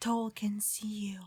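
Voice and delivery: barely audible, very quiet, hushed whisper. Passing by another character in the scene: whispering very quietly. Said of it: "I will whisper very quietly".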